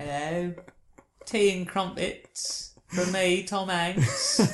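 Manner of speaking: soft, high-pitched put-on British accent. Discussing Tom Hanks playing the BFG, doing Tom Hanks doing British accent. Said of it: "Your impersonation of Tom Hanks being British".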